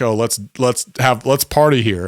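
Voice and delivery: ordinary talk, nothing marked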